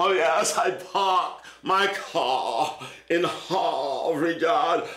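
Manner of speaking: slow, affected put-on British accent. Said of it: "with the British accent".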